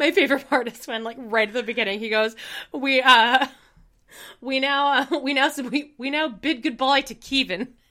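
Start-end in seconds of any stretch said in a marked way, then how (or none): 2.7-7.7 put-on higher, slow New Zealand accent. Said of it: "You have a very good accent".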